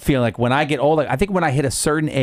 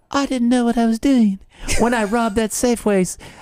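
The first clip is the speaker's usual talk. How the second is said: goofy, high-pitched cartoon character voice; 9 semitones higher than usual. Imagining an old person caught doing something illegal, South Park voice. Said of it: "why do you sound like South Park?".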